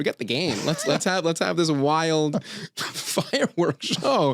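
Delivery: acted excited hype. Retelling the team staff's excitement about the fireworks show: imitating excited team staffer. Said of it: "someone who works for the team be so excited".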